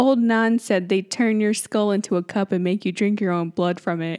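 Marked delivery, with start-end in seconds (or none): none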